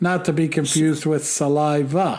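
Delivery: ordinary talk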